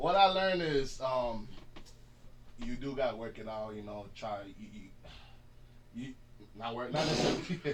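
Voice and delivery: very loud, slow, stumbling stuttering. Answering what was learned today: stuttering. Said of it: "I'm stuttering, my little stuttering's coming out".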